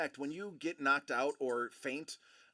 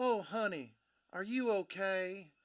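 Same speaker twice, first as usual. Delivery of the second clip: high, slow Southern belle drawl, okay stretched out; 5 semitones higher than usual. Retelling what a woman said after a fall: imitating a Southern belle drawl. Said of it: "in this beautiful little Southern belle drawl".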